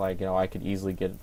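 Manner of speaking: plain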